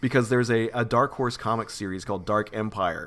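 plain

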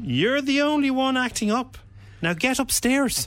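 very high, put-on Irish mammy voice. In a staged scene of a seven-year-old's childhood in Navan, the mother speaks; Irish mammy voice. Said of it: "I'm going to use an Irish mammy voice".

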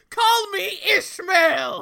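big cry, very high-pitched and very loud. Retelling an invented big reveal scene: imitating Herman Melville shouting. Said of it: "he shouts".

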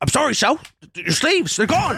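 put-on very high-pitched old-West oilman delivery. Joking about what people expected from the Lincoln role: Daniel Day-Lewis There Will Be Blood voice. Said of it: "people were expecting him to just be like".

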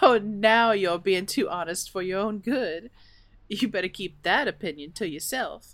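playful, joking, teasing tone. An old lady answers a too-honest remark, teasing. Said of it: "I'm just teasing you".

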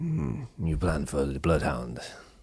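poor fake French accent. Trying a quote in a french accent after admitting it isn't good, bad french accent. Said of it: "I really can't do a good French".

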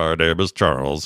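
low, robotic, deadpan voice. Describing how a character's voice sounds, demonstrating: robotic Charles voice. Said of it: "but like it's super like robot".

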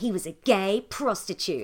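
ordinary talk

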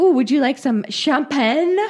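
bad put-on French accent. Retelling how Amanda made mimosas, quoting her in the French accent. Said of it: "Amanda's also doing the French accent".

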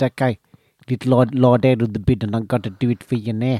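imitated South African accent. Retelling what a man from South Africa said to the speaker, imitating the accent. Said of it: "it is a totally clear South African accent".

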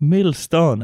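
mock Spanish accent on milestone.

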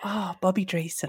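soft, quiet, muttered under the breath. Retelling how an aunt greeted TV performers: imitating Auntie Leslie under her breath. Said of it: "you'd hear her under her breath go".

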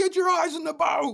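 acted, very high, shrill military-style screaming. Retelling the guy screaming again up close: imitating someone screaming. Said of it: "starts screaming again".

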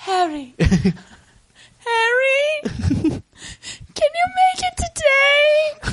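very high-pitched, very slow, stretched-out voice. Mocking a movie character's line: Jennifer Connelly impression. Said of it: "That's my impression of, uh, Jennifer Connelly".

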